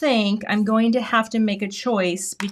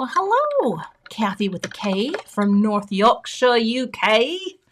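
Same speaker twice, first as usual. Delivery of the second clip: bad, terrible attempt at a put-on British accent. Greeting someone from north yorkshire, uk, then calling it terrible: bad british accent. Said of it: "that was a terrible accent".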